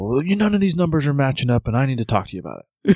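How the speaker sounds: put-on annoyed, accusing, pissed-off tone. Speaker retells a man who came in for an appointment, imitating a pissed-off man. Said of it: "And he's all pissed off".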